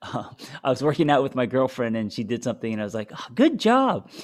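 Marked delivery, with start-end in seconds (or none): 3.1-4.1 put-on very high-pitched baby talk voice. Retelling praising a girlfriend while working out: baby talk tone. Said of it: "like I talk to my, uh, fifteen-month-old".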